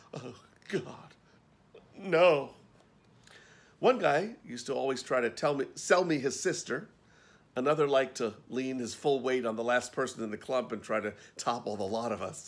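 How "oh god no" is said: trembling, shaking mutter with the voice raised. Retelling a friend's reaction onstage: imitating a faint, shaking mutter. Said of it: "mutter in a faint, shaking voice".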